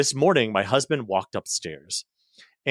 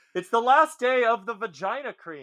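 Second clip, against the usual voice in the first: very high scream; 12 semitones higher than usual. Recounting answering the husband's shouted question: retelling a scream from another room. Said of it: "I'm screaming from the other room".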